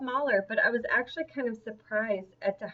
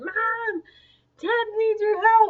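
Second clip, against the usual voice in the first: put-on very high, loud children's screaming call; 11 semitones higher, 6 dB louder than usual. Retelling the kids running up about a loose pig: imitating kids screaming. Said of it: "the kids come flying around the corner screaming".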